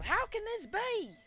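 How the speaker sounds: loud, very high, raspy anime cowboy voice. Imagining how an anime cowboy character would sound, raspy, loud anime cowboy voice. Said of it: "like that kind of raspy, loud voice".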